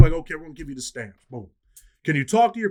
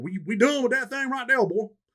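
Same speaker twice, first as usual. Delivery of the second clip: put-on old country man voice, higher; 6 semitones higher than usual. Retelling a father getting on the phone with his son, old country boy voice. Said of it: "Old country boy".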